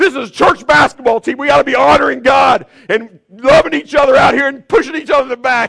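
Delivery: very loud, very high, crazed, out-of-control yelling. Recounting a church basketball game, the speaker retells shouting at players: retelling a yell. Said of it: "I'm just going crazy".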